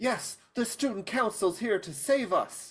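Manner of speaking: bright, hopeful, joyful cheer, very high. Putting on a voice unlike their normal one: hopeful and joyful voice. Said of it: "in a voice that is more hopeful and joyful".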